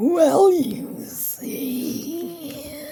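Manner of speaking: spooky reptile voice. Playing the reptile posing as Grandma, answering the girl, in a scary reptile voice. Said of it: "what a scary reptile voice you have".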